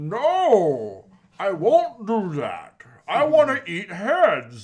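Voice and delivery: very slow, loud, swooping, with "No" stretched out. Imitating how Venom sounded in the movie, Venom voice sounding like Bane. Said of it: "this sounded like he was just like".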